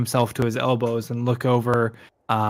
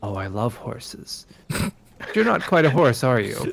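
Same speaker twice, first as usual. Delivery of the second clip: put-on spellbound, awed, childlike curiosity and wonder. A creature hops down from a chest and marvels at you with childlike fascination. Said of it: "just like this this childlike fascination".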